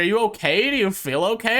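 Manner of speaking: mock concern bubbling with laughter, high-pitched. Retelling a stepmom's question about eating uncooked food: imitating someone laughing while talking. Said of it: "laughing about it".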